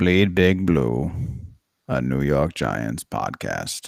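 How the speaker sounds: voice dropped very low, very deep. Reading the podcast title in different celebrity voices: Morgan Freeman impression. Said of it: "That's my Morgan Freeman impression".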